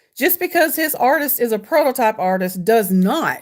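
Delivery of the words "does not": heavy emphasis on "does not". Reading a commenter's message aloud, stress on DOES NOT. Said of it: "and she put that in all caps".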